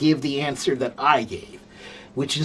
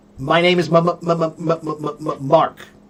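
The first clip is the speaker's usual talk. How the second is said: put-on stuttered speech, much slower. Explaining the word stuttering, demonstrating a stutter. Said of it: "That's stuttering".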